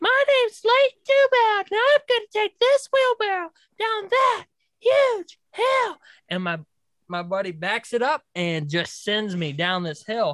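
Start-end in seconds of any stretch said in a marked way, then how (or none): 0.0-6.0 put-on very high small-child voice. Describing an old wheelbarrow video of yourself as a young kid; little kid voice. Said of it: "you hear my little voice".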